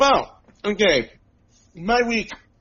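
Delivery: talking with mouth full, slightly high. Asked how his week was, the speaker answers while talking with mouth full. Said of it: "What are you eating?".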